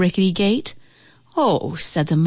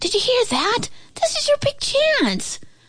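very high, squeaky, whispered squirrel voice. The squirrel whispers to the old house. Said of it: "the squirrel whispered to the old house".

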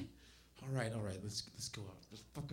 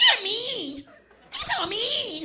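put-on annoying, very high, loud girly whine, pitched way up. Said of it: "Girls love to say it".

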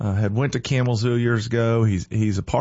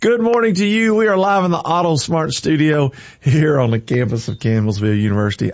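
loud, talking through bursts of laughter; 4 semitones higher, 5 dB louder than usual. Morning radio host greets listeners live, laughing while talking. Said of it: "I'm laughing".

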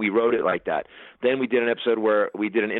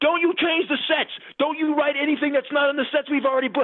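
put-on screaming, much higher and faster. Retelling how a man screamed at the speaker on the phone; imitating Randy screaming. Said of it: "He's just screaming on the phone at me".

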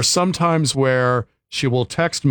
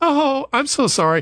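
high, fake-apologetic robot voice. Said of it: "like this robot voice".

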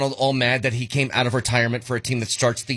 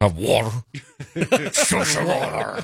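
strange alien voice with swooping pitch.

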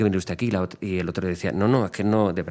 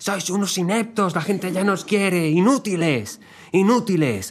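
very high, shrill shouting; 10 semitones higher, 3 dB louder than usual. Retelling what someone shouted in an audio note, retelling a shout. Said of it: "mandó una nota de audio gritando".

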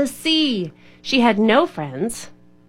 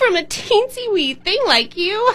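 shrill, very high, scornful sneering jeer; 10 semitones higher than usual. Sharky Shark answers the wee crab who begged to be spared, sneering. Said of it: "she sneered".

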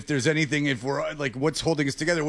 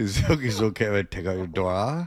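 mock seductive voice, lower; 7 semitones lower than usual. Joking about a recorded question as seduction: imitating Nick seducing. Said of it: "this is Nick, like, seducing it".

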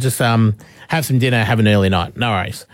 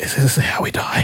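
acted-out whisper; 3 dB quieter than usual. Retelling what Bria whispered to the speaker in the car, retelling a whisper. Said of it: "whispers to me".

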